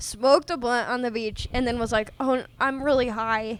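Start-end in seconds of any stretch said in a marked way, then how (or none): 2.2-3.6 put-on worried tone. Retelling a friend's words on the beach: imitating a worried friend. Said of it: "he was worried about it".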